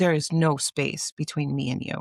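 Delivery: put-on English bent hard by very strong Spanish accent. Retelling a mother's line from the movie Spanglish: strong Spanish accent. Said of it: "in her very strong Spanish accent".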